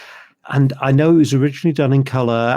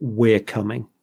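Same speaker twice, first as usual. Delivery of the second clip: ordinary talk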